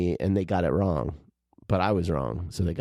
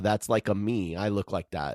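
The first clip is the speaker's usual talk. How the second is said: usual speaking voice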